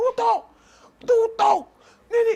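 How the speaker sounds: very high, shrill, loud yell. Imitating the other speaker at a microphone: imitating Eric shouting. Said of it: "Unashautia president".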